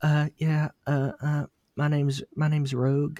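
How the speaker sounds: stumbling, timid, high voice. Mocking an actor's line from the X-Men movie: imitating Anna Paquin as Rogue. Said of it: "fucking Anna Paquin going".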